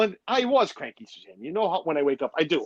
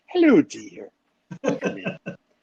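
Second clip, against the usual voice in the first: put-on old Scottish nanny voice; 2 semitones higher than usual. Greeting Catherine as she pops in, in a Mrs. Doubtfire voice. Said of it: "I turn into Mrs. Doubtfire".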